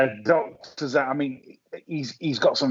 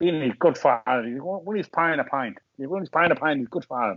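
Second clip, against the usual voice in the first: put-on imitated Indian accent. Talking about a contender's form, in a put-on Indian accent. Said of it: "That was my that was my Indian accent".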